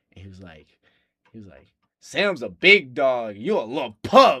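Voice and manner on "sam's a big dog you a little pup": emphatic, forceful, very loud and drawn-out delivery. Retelling a remark someone made while staring them in the eye: imitating a forceful delivery. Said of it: "he said it with so much, like, like, umph".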